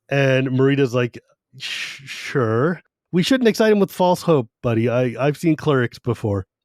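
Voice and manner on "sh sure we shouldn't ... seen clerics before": usual speaking voice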